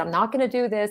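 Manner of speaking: ordinary talk, nothing marked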